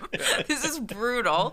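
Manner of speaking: high, loud, laughing disbelief.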